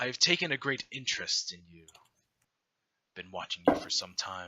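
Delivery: godlike enthroned figure voice. Voicing a godly figure on a throne greeting a player's character: godly figure voice. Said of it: "godly figure".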